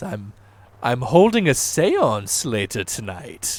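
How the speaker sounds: speaking with a little theatrical flair. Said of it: "saying it with, like, a little bit of flair".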